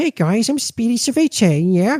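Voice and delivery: high, swooping, sing-song cartoon voice. Listing a cartoon's voice cast, Speedy Cerviche impression. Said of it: "I decided to do an impersonation".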